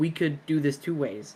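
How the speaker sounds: muttering quietly under the breath. Speaking in character to a companion about a rich stranger: under the breath. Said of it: "just under my breath be like".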